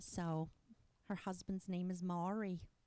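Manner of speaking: big, over-the-top, campy New Jersey accent. An actor in a campy show demonstrates her character from Jersey: Shirley Summers' Jersey accent. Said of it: "she's from Jersey, and she talks like this".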